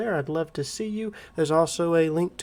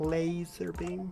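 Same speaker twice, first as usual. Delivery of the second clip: soft, hushed, smug, self-satisfied supervillain delivery; 8 dB quieter than usual. Firing a laser cannon from outer space: Dr. Evil impression. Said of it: "Gotta do my best Doctor Evil impersonation there".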